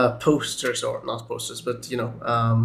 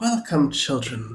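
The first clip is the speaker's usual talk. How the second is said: very calm, serene, unruffled bishop voice; 4 dB quieter than usual. Voicing a pale bishop welcoming the group: very calm bishop voice. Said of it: "as he says very calmly".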